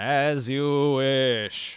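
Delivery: leering genie voice. Voicing a genie answering a player's thanks: leering genie voice. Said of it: "The genie leers down at you and says".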